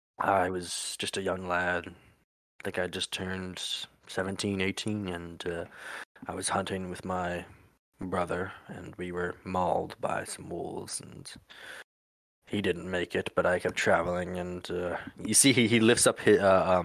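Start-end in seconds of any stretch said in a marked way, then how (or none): 0.2-15.0 really deep storytelling voice. Voicing a character telling a story by the fire: really deep voice. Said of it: "this really deep voice".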